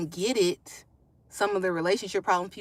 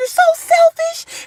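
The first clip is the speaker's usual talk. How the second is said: play-acted very loud, very high, teary angry outburst; 12 dB louder than usual. Retelling what an upset mom used to say: imitating an angry mom near tears. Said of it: "my mom used to get mad to where it looked like she wanted to cry".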